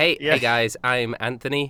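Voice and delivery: put-on nasal American accent. Asked to imitate the other players' characters: nasal American accent impression of Anthony. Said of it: "trying to do an American accent".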